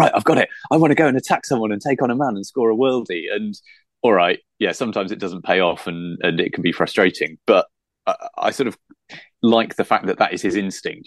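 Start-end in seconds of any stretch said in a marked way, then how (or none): 0.0-3.2 eager, pitched-up, puppy-like keen gush. Imitating a player who gets the ball, imitating James Waite's puppy-like enthusiasm. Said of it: "puppy-like enthusiasm".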